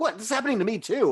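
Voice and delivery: defensive retort, pitched very high. Retelling how a character gets defensive during a fight: imitating a defensive reply. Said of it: "gets defensive about it".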